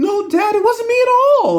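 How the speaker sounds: very high, croaky, super hoarse voice. Retelling a daughter denying car races to her dad, the speaker does Maggie's super-hoarse voice. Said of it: "Her voice gets super hoarse".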